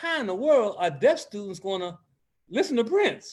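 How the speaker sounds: ordinary talk, nothing marked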